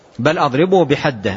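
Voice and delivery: ordinary talk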